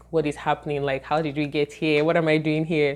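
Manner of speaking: usual speaking voice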